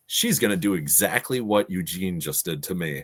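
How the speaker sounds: ordinary talk, nothing marked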